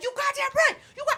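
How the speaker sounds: furious, worked-up, drawn-out angry yelling. Retelling yelling to friends in a restaurant about him, retelling angry yelling. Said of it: "And I'm yelling in the restaurant".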